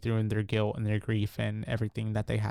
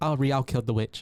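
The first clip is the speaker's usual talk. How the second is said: normal talking voice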